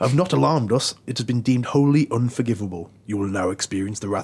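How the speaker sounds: put-on faintly menacing, slightly sinister voice. Reading out Anonymous's message to Sony, in a put-on slightly sinister voice. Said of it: "I'll do it in a slightly sinister voice as well".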